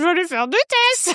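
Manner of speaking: teasing, high mimicking voice. Repeating the other speaker's line back: mocking imitation of the other speaker. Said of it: "qui prend la phrase la plus sensible".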